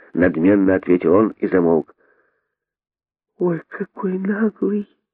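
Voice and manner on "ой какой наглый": soft, high-pitched, hushed half-whisper. Narrating the monkey daughter's reaction to the haughty stranger, half-whispered. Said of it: "прошептала мартышка-дочка".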